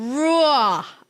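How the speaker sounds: New Jersey accent on raw. Asked why he said it that way, speaker repeats it: New Jersey accent. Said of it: "Like from Jersey. I'm from Jersey".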